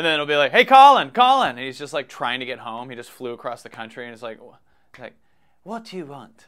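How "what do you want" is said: hushed, soft, badly done Australian accent. Acting out Colin, just flown home, answering people calling his name, bad Australian accent. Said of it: "I'm not good at an Australian accent".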